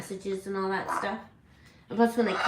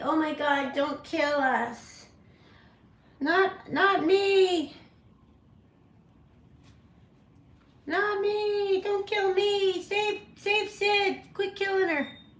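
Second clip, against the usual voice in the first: mock very high, frantic, panicked bird-like screech; 13 semitones higher than usual. Retelling how a pet bird screams during medication: imitating a screaming bird. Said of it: "Kiwi starts screaming like".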